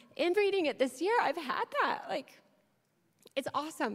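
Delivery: on the verge of tears. Resuming after apologizing for getting emotional, about to cry. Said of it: "I'm going to cry. Sorry".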